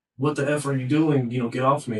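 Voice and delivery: mock screamed, yelled delivery full of alarm. Retelling what someone inside screamed during an argument: imitating someone screaming. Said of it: "she's screaming".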